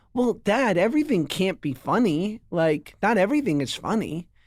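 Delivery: put-on patient, calm, reasonable grown-up tone. Retelling what a five-year-old son said, imitating him as a reasonable adult. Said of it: "like a total reasonable adult".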